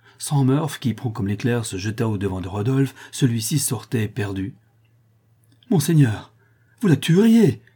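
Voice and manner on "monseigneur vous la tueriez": high, loud, exclaimed outcry. The squire cries out to the prince while holding him back: crying out. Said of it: "s'écria le squire en retenant le prince".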